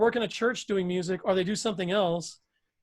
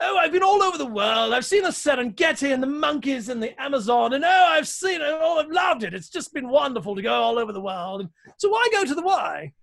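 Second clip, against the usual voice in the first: put-on British accent; 7 semitones higher, 5 dB louder than usual. Demonstrating the inflection they used when they did it, British guy accent. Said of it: "like a British guy talking in".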